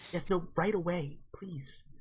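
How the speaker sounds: soft, half-whispered, under the breath. Voicing a woman who half-whispers on the phone about an intruder: half-whispering. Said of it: "you hear she's whispering now".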